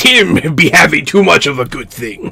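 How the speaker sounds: hearty, put-on pirate voice. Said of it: "I can't stop doing pirate voice".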